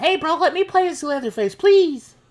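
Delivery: put-on very high, shrill, loud child's scream. Retelling another player's plea before a game: imitating a squeaker screaming. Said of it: "some squeaker was screaming at me".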